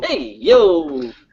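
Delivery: put-on heavy Brooklyn New York accent. In a chat about new york accents, say it in a heavy brooklyn new york accent. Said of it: "heavy Brooklyn, New York accent".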